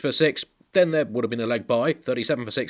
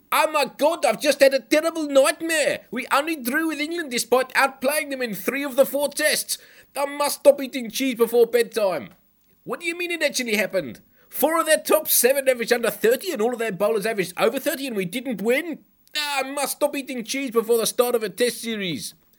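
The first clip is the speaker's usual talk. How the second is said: put-on South African accent, very high pitch; 13 semitones higher than usual. Imagining South Africa waking in the night after the series, South African accent. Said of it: "that's the second Southern Hemisphere accent I've done".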